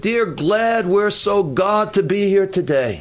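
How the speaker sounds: play-acted, proclaiming, prayer-style voice. Retelling how someone stood and prayed aloud in a meeting, loud voice. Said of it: "and in a loud voice".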